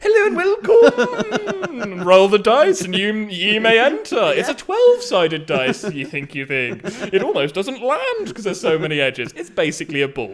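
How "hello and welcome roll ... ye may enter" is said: put-on wizard voice, higher, louder, slower. Imagining the greeter at a board game cafe, in a wizard character voice. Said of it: "somebody who might be a little bit wizard".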